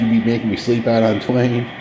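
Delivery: plain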